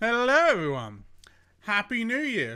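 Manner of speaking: talking with mouth full. Greeting everyone right after going live, talking with mouth full. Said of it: "I'm munching on chocolate".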